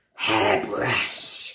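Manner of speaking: raspy, scratchy, rough, scraping voice. Exploring voice sounds for a hairbrush, saying the word in a scratchy voice. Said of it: "It's quite a scratchy sound with my voice".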